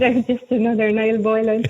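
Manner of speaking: ordinary talk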